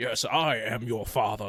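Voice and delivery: put-on British villain voice. Retelling how a character sounded on the show: British Darth Vader voice. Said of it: "Darth Vader speaks British English".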